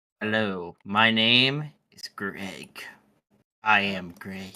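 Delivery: threatening voice. Voicing an old man at a table greeting strangers: threatening voice. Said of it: "Why do you sound so threatening".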